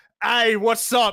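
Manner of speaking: loud, high put-on Australian accent. Showing how a poor Australian sounds: put-on poor Australian accent. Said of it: "I'm trying to do Australian, but you're poor".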